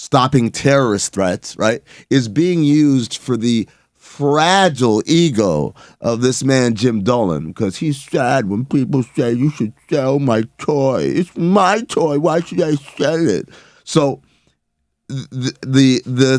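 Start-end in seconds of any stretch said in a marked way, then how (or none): 9.3-13.5 weepy, tearful, crying voice. Imitating a sad owner complaining about selling: imitating Jim Dolan crying. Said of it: "generic crying voice".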